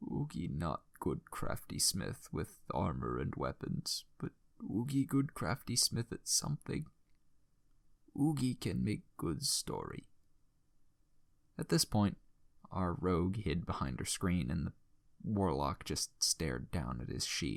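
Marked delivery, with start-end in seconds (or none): 0.1-10.0 broken, dying speech with swooping pitch. Recounting a game, the speaker voices the dying troll smith to the party: Oogie's dying broken speech, put on. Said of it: "The tale of a troll who crafted armor for his friends. / [name]'s breath began to slow, and [name] grabbed his hand, holding it as best as he could. / our party lost [name] the crafting smith. / [name".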